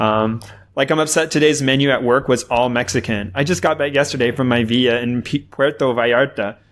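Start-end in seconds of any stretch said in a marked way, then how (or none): none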